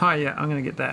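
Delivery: plain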